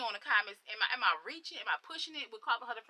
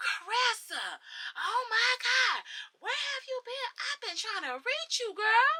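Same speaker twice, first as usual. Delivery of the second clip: very high, fake gushing enthusiasm; 12 semitones higher than usual. Retelling someone coming in and greeting her: imitating fake excitement. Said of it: "just the fakeness".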